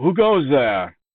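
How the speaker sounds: high-pitched yell called across. A character challenging the approaching party, yelling out. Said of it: "He yells out".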